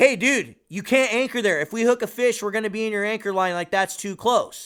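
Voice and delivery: mock hollering, high-pitched yell. Retelling an argument over an anchor spot: imitating Lonnie yelling. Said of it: "yells at the guy".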